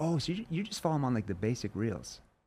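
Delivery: dismissive, downplaying, minimizing tone. Speaker demonstrating how they react to someone's answer, in a downplaying tone. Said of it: "I'm downplaying it... my tone is kind of".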